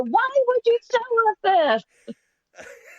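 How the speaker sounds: very high, slow, drawn-out yelling. Retelling shouting at another speaker over a tv shot: retelling own shout. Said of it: "I was shouting at you".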